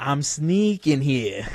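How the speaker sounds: attempted Jersey accent slipping into an Australian accent. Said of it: "doing like a Jersey accent".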